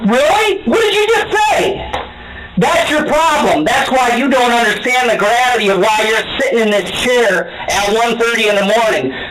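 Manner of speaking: high angry yelling. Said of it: "stop raising your voice".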